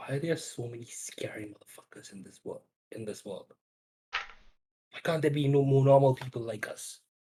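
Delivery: whispered, hushed delivery. Whispering a worried question to the rest of the party: whispering to the party. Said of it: "I just whispered at the party".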